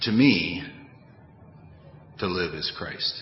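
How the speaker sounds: emphatic stress on "me", leaned on a bit extra. Quoting a Bible verse, slightly exaggerated stress on me. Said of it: "me is an emphatic me. Exaggerated a little bit in pronouncing it".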